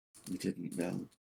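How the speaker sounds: very quiet, hushed, faraway haunted muttering. Voicing a character whose gaze becomes very far away: haunted mutter. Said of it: "And he just kind of mutters".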